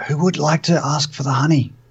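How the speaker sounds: sort of a stage whisper. In character, addressing the rest of the group; sort of whispering. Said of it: "I'll sort of whisper to the group".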